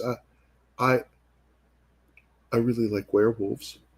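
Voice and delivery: put-on quiet, small, soft little voice. Retelling a girl who spoke to the speaker, imitating a quiet little voice. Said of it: "just this quiet little voice goes".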